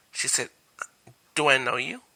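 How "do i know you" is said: play-acted, extremely snide, snarky tone. Retelling what a crush said when greeted: imitating a snarky voice. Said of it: "in the most snarkiest voice".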